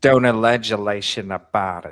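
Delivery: put-on Boston accent. Quoting the judge's instruction about speculation: imitating the judge's Boston accent. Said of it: "That Boston accent is heavy in this trial".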